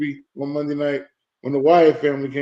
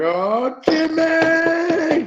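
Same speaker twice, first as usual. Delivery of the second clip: put-on, shrill, very high scream, one word stretched out; 14 semitones higher than usual. Retelling a movie scene about hearing news: imitating a Goodfellas scream. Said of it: "screaming like Goodfellas".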